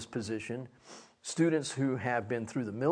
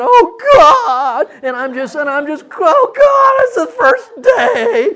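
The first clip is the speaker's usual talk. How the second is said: put-on pathetic despair, louder, higher, slower; 18 dB louder than usual. Retelling throwing himself on his bed on the first day, acting out being a pathetic mess. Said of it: "I was a pathetic mess".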